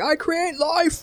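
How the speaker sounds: mock very high-pitched, theatrical shouting. Recapping a scene where he kidnaps the family, retelling a shouty line. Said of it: "another one of his amazing shouty lines".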